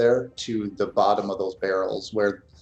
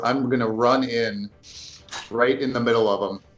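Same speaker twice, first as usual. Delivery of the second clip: plain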